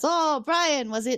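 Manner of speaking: put-on stage Irish accent. Retelling an episode, the speaker voices the duck man addressing another character in an irish accent. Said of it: "I said I wasn't going to do an Irish accent".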